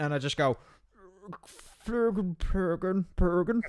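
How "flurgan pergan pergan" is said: put-on nonsense babble in a doddering, drooling old man voice. Acting out a future self as an old granddad in a wheelchair: drooling old man babbling. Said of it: "I'm gonna be an old man shitting my pants in a wheelchair".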